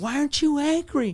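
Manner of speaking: high, crying, yelling. Retelling what the crying wife yelled: imitating someone yelling. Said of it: "she's crying, and she's yelling".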